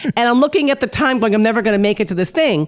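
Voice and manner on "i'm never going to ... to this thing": normal talking voice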